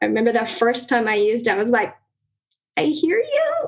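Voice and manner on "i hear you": question-like rising intonation. Retelling the first time saying the phrase to him, said like a question. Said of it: "kinda like a question".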